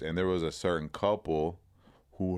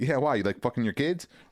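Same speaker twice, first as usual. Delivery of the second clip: crazed, unhinged, off-the-rails tone, higher pitch; 6 semitones higher, 4 dB louder than usual. Retelling a movie scene, voicing the woman's reply; imitating someone unhinged. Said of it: "Like all fucking crazy".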